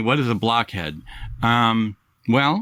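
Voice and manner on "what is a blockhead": ordinary talk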